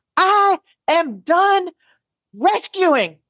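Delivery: loud, high-pitched yell. Marching up the stairs at home, re-enacting yelling to no one in particular. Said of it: "I'm yelling to no one in particular".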